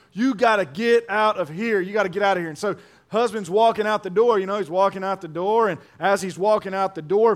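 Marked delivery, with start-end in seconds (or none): 0.1-2.4 put-on angry voice. Telling a story about a woman throwing out her husband, imitating an angry wife. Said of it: "got so mad at her husband".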